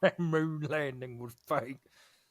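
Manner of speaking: mocking, fake Southern accent. Asked about the mocking voice, doing it again, mocking southern accent. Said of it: "You really leaned into it".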